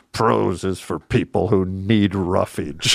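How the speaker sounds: put-on quippy, witty delivery in a New York accent. Quoting a witty professor's saying, in Sheldon Zitner's New York accent. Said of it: "in his New York accent".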